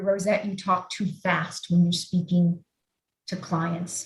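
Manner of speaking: ordinary talk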